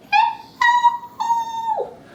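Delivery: squeaky, very high-pitched voice. Leading a hello game with bread and butter, saying hello as high as possible. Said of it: "Let's say hello as high as you can".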